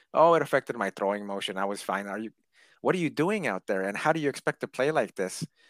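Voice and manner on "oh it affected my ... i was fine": put-on casual, dismissive, offhand nonchalant delivery. Acting out how a player whose job is to throw the ball explained himself, mock-nonchalant. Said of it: "He said it so nonchalantly".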